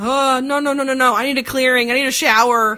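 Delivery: high, loud panicked pleading.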